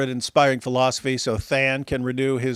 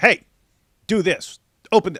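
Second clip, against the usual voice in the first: mock bossy, loud, pitched-up barking; 6 semitones higher, 5 dB louder than usual. Retelling how a caller barked orders: imitating someone blasting orders. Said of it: "starts blasting orders".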